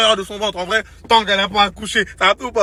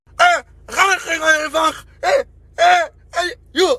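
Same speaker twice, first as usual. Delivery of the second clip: mock garbled, badly articulated speech, higher pitch; 7 semitones higher than usual. Imitating a mother who cannot articulate, telling her child to get back in: imitating unclear, badly articulated speech. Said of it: "parce qu'elle pouvait pas bien articuler".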